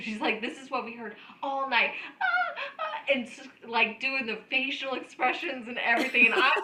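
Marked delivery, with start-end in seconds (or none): 0.4-3.1 very high, faked sexual moans. Retelling a woman in a hotel lobby mocking what she heard all night, imitating orgasm moans. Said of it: "she starts acting like she's having an orgasm".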